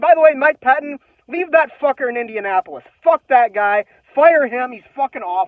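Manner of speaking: very loud, shrill, pissed-off furious rant. Speaker rants on video about a football loss, furious ranting. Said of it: "I'm so fucking pissed off right now".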